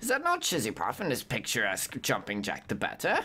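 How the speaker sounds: theatrical, swooping talking-cat character voice. Voicing a talking cat's lines, admitting the voice is off, put-on talking cat voice. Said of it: "He's a good watchdog. Cat".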